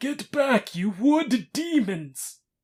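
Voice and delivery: very high, very loud, shrieking battle-cry yell. In a tabletop game, a small folk character yells to scare back termites. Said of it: "just yelling at them".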